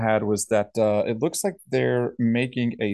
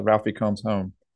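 plain

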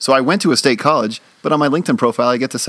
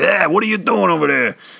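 grizzled, hard-edged newsroom editor voice, pitched up; 5 semitones higher than usual. Retelling how a former teacher, a grizzled newsman, spoke: imitating James Brodell's grizzled newsman voice. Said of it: "he kinda talked like that".

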